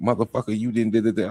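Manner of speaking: mock harsh, combative tone. Retelling what his wife says in an argument, imitating aggressive talk. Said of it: "an aggressive conversation".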